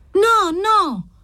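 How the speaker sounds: very high, shrill, shrieking cry. A girl answers the woman who has just spoken coldly to her, shrieking. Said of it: "strillò la ragazza".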